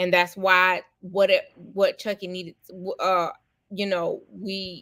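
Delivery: stuttering with tangled, stumbling false starts. Explaining why the platform is there, the speaker loses the sentence, stuttering. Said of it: "I started stuttering".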